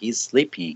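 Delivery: ordinary talk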